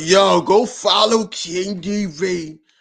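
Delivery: very slow, raspy, dragged-out drawl. Retelling what a drunk friend said on the screen: imitating a friend's raspy voice. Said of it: "he got that raspy voice".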